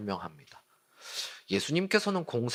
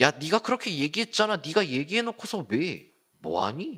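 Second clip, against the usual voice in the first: high-pitched mocking, jeering tone. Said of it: "라는 식으로 예수를 조롱하기 시작합니다".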